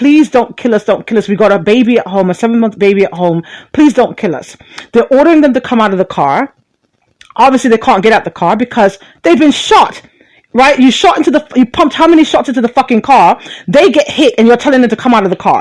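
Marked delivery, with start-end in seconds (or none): 0.0-4.6 frantic, desperate, begging pleading, over and over. Retelling her plea to the cop after a shooting: imitating someone pleading. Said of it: "she's pleading with the cop".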